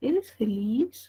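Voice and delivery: pitch climbs at the end of feliz. Phonetics class pronouncing a question to hear its final tone: rising final pitch. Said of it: "Yo siento que subo".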